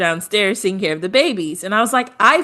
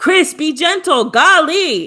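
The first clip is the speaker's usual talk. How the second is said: high-pitched put-on scream; 8 semitones higher, 4 dB louder than usual. Recapping a challenge where the boys change baby clothes, retelling a woman's scream. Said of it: "And Huda screams".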